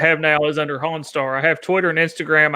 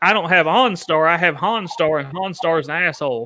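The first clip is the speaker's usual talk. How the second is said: ordinary delivery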